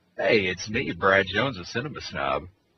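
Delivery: deep on-air radio host announcer voice. A guest introducing himself at the start of the show, in a radio voice. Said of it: "I'm loving the radio voice".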